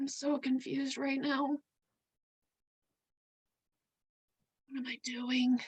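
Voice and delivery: whispering in character. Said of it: "I just kinda start to whisper".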